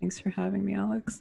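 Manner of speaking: on-air public radio presenter read. Podcast guest answers the host's welcome, doing an NPR voice. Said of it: "best N P R voice".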